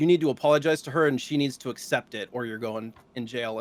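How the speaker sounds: ordinary delivery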